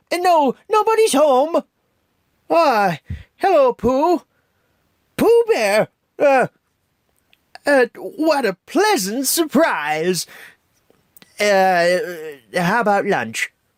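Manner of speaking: very high, stumbling, swooping pitch. A speaker acts out Rabbit greeting Pooh, Rabbit voice from Pooh. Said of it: "That was my rabbit's voice".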